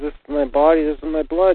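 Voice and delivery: ordinary talk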